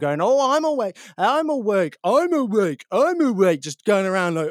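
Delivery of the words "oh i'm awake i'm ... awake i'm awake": very high, derisive, stretched, drawn-out taunting yell. Retelling mocking housemates who woke the speaker up: mocking shout imitating family. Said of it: "I started shouting as if I was pretending to be them".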